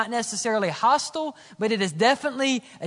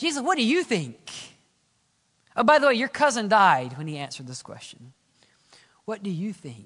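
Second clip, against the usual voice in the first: mock dark, critical, sinister tone; 2 semitones lower than usual. Voicing the Pharisees as they question Jesus, in a mock-sinister voice. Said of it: "that sinister voice".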